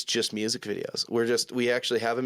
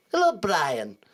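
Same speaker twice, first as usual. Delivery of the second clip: put-on voice pushed up high; 6 semitones higher, 4 dB louder than usual. Showing another voice used at the drive-thru: Stewie Griffin voice.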